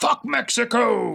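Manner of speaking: odd, very high, shrill, croaky, rough scream. Recapping a movie plot, quoting a movie line as a mock scream in weird voice. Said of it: "I'm just screaming it in a weird voice".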